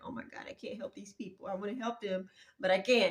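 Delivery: put-on crying voice. Retelling being unable to help people, imitating own crying. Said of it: "I put my head down and I started crying".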